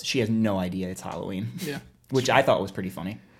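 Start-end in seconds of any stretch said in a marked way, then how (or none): 0.0-1.5 mock deadpan delivery, lower pitch. Speaker retells how a man answered someone's remark: retelling a deadpan reply. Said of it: "Ed just looks at him deadpan and goes".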